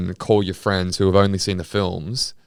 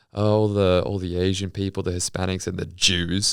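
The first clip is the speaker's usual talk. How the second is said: ordinary talk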